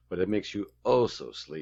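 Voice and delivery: smarmy, condescending, kindly grandpa-style voice. Describing a man to a friend, the speaker imitates his condescending grandfatherly tone. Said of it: "he's got this grandfatherly tone, but he's very condescending".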